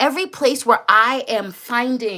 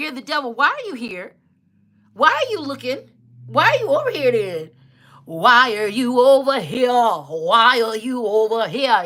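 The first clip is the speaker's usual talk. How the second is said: jeering, accusing, mocking rant, why drawn out. Reading out what trolls say: imitating a troll commenter. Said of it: "they be like".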